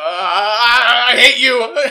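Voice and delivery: shrill, very slow, very loud, high, drawn-out scream. Shaking a tiny captured demon in character: in-character scream. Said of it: "He screams at the little guy".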